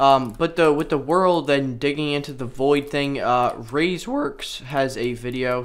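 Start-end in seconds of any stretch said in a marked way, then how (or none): 3.2-5.6 voice cracking, slower pace. Mentioning a video on the topic, voice cracking. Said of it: "Sorry, voice crack there".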